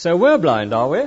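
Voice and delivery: loud, sarcastic, challenging tone. Retelling the Pharisees questioning Jesus, in a mock-sarcastic question. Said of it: "I think it probably went like this. ... It's sarcasm, I think".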